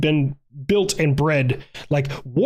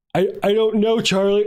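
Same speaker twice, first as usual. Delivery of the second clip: high-pitched, spoken through a yawn; 5 semitones higher than usual. Answering someone's question, the speaker talks while yawning. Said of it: "Oh my God, I'm yawning".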